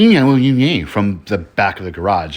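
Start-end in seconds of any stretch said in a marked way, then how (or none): 0.0-0.9 derisive, high, loud, mocking jeering voice. Retelling a ghost story, imitating a voice mocking from the garage. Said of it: "Best way I could describe it is".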